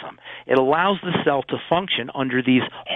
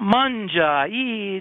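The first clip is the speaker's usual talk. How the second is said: put-on mafioso-style Italian accent, pitched up; 7 semitones higher than usual. Explaining nutrition, imitating old Italian mothers urging you to eat: mafioso-sounding Italian accent. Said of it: "You sound like a mafioso when you did that".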